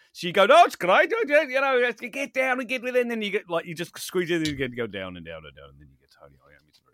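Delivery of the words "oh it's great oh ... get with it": very high, loud, squeezed voice. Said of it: "it's [name] in a vice".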